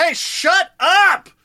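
mock shrill, high, loud, fed-up yell. Retelling yelling from the roof deck door at people who can't hear: retelling a yell. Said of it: "I'm yelling".

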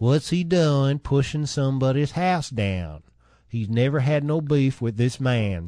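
put-on full Tennessee accent, laid on thick. Offering more of the accent, quote Sam Higdon in a Tennessee accent. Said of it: "Want more of a Tennessee accent?".

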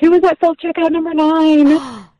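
put-on high-pitched yell. Telling a store story, the speaker quotes a woman at self-checkout: imitating a woman yelling. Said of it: "was kind of yelling".

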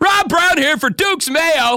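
very high ad pitchman delivery. Joking about a mayo skit, the speaker does a sponsor line in infomercial voice. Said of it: "That's my infomercial voice".

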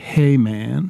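mellow, laid-back voice. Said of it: "It would be mellow".

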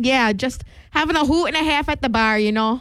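muddled put-on Midwestern accent, several accents blended. Chatting about two singers doing a duet, vague Midwest accent. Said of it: "what accent are we going for here?".

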